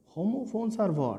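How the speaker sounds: ordinary talk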